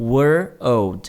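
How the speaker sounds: put-on "were" and "old" kept separate, slow, word by word. English pronunciation drill, slowly first before repeating: were old slowly, word by word. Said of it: "devagarinho primeiro".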